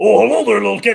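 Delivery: booming, rough monster voice. Acting out Sweetums meeting Schroeder, Sweetums voice. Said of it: "Here's my impression of Schroeder and Sweetums mixing or meeting".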